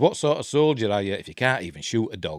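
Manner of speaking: normal talking voice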